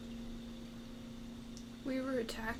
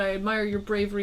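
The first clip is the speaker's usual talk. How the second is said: plain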